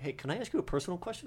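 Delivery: quiet, soft, hushed whisper. Retelling a woman who came up after getting glow sticks, retelling a whisper. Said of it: "whispers to me".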